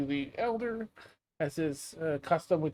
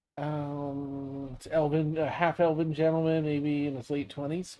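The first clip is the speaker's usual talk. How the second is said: ordinary talk, nothing marked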